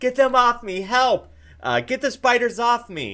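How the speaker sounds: very high, very loud, shrill, terrified panicked screaming. A game narrator voices Ismark rolling on the ground, screaming in terror. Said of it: "He screams out".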